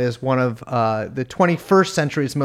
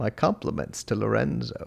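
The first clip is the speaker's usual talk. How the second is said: showy, creaky put-on food-lover's gourmand voice; 3 semitones lower, 8 dB quieter than usual. Retelling speaking to a cashier while buying a Diet Pepsi: gourmand voice. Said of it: "lapsed into the gourmand voice".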